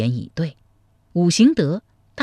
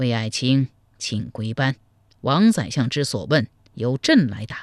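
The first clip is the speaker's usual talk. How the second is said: ordinary delivery, nothing marked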